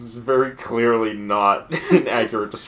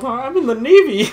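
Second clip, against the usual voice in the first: put-on cartoon duck voice; 7 dB louder than usual. Joking about what the duck character would say: Donald Duck voice. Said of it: "Donald Duck over here is just like".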